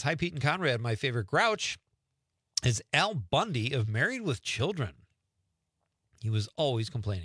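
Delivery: ordinary delivery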